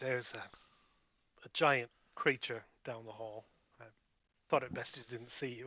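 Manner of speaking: secretive, hushed half-whisper. Speaking in character to a companion being carried: half-whispering in character. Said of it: "And then I'll whisper".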